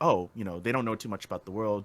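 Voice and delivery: ordinary talk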